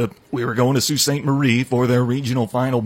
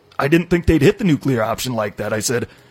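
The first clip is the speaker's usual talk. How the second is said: ordinary delivery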